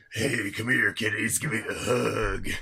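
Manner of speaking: put-on sinister, creepy predatory wolf voice. Show the others what a wolf's voice might be, in a creepy pedophile wolf voice. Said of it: "creepy pedophile wolf".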